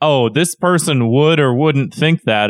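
ordinary delivery

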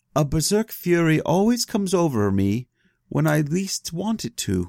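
small, meek, timid-sounding voice. Quoting what Thorir says in the sagas, in a put-on meek merchant voice. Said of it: "is that your merchant voice?".

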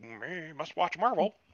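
flat, robotic video game character voice. Mocking someone who watches anything with Marvel on it, in an NPC voice. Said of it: "you sound like an NPC".

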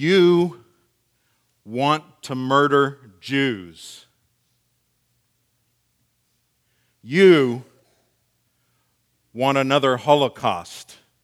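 menacing, as loud as possible without shouting, drawn-out "you". Retelling a man confronting the speaker in his face, imitating his intimidating voice. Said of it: "with an intimidating voice".

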